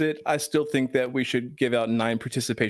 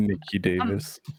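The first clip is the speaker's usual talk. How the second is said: seductive, sexy, sultry voice, lower; 6 semitones lower than usual. Saying a name after being asked for a sexy voice: real sexy, sultry voice. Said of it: "say Nikki Davis's name in a real sexy, sultry voice".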